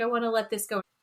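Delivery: put-on crying, mock-tearful delivery. Retelling what a woman holding a rock said, imitating someone crying. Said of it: "She's like crying".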